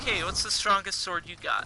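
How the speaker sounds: ordinary delivery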